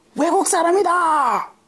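mock, shrill, sudden, very high child's yell. Retelling how a child on an island yelled at the group: imitating a child yelling. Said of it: "suddenly yelled out".

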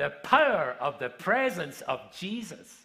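mock deliberate, emphatic, really loud, slow delivery. Retelling what you said while sharing with a room of tables, really loud voice. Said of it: "I said it in a really loud voice".

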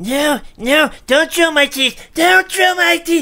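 giddy, laughing-gas imp creature voice. Player makes the noise the audience picked, an imp on laughing gas. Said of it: "the noise that Carcer and I will both make is an imp on laughing gas".

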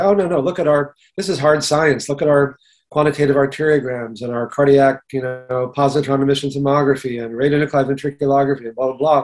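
normal talking voice

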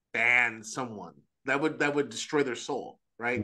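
ordinary talk, nothing marked

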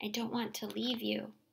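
whispering. Facing a new school, the narrator speaks to their mother, whispered. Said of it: "I whispered".

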